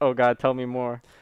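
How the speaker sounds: put-on suggestive voice. Retelling a commercial parody where a customer answers suggestively: imitating a suggestive voice. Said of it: "super, like, suggestively".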